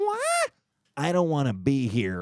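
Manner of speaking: high-pitched, swooping, sing-song register. Describing a person's different modes, doing Sebastian's high-pitched mode. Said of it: "Then there's the high pitch".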